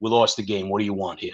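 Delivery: put-on Boston accent. Retelling a player's blunt answer after a lost game: Pete Kendall Boston accent. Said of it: "he's got this real Boston accent".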